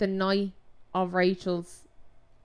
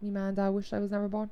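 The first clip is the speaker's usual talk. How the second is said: ordinary delivery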